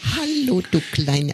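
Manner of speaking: put-on very high, babyish pet-talk voice. Asked about her baby voice, the speaker shows how she talks to her dog in a baby voice. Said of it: "Meine Babystimme".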